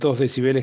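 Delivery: ordinary talk, nothing marked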